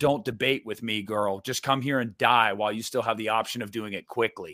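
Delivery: mock angry, pissed-off, threatening delivery. Quoting a favorite horror movie line, imitating Pinhead, angry. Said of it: "and he's mad".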